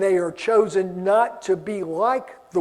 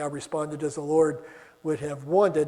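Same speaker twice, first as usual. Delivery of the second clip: ordinary delivery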